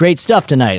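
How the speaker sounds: put-on loud projecting call. After the show, the speaker calls through a mask to Sam walking by: said loudly. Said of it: "I tried to say it loud".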